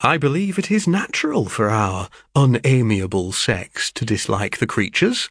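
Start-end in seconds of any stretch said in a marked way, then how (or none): none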